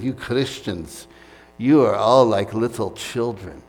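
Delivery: slow, sarcastic attempted Romanian accent.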